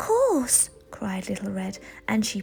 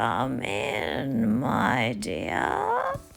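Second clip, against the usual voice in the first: very low, deep, raspy, drawn-out, very slow rumble; 11 semitones lower than usual. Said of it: "it was a deep, scratchy voice that answered".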